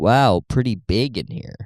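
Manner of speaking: put-on dry, lightly sarcastic British accent. Mimicking a british person walking into a room: imitating lightly sarcastic british person. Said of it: "British people do love being lightly sarcastic".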